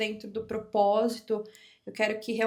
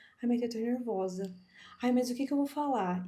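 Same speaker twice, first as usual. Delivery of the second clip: shy, unsure, timid, nervous voice; 3 dB quieter than usual. Describing how people arrive here for a session: imitating a shy person. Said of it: "elas chegam aqui tipo toda tímida".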